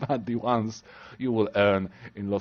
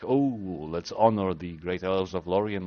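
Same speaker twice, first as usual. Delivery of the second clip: put-on humble, nice, modest delivery; 4 semitones lower than usual. Imagining a dialogue answer the game does not offer: mock humble answer.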